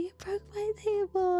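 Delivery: put-on, acted-out yelling. Retelling yelling at dad after he broke the table: imitating own past yelling. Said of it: "I remember yelling at him".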